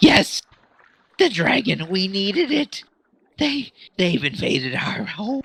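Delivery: high, crazed fish-creature voice. A storyteller voices a Kuo-toa in the game, crazed fish-creature voice. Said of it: "so it's kind of crazy. It's like".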